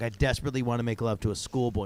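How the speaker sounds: ordinary talk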